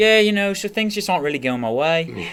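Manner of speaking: put-on pirate-like accent, high and loud. Acting out how Rory answered during the interview, do Rory's accent, kind of pirate-like. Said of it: "let me do the accent".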